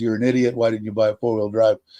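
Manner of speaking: ordinary talk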